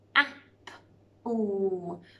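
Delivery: robot voice, "apple" split into separate sounds. Showing children a word split into its sounds: robot talking, sounding out. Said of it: "What does it sound like I am robot talking?".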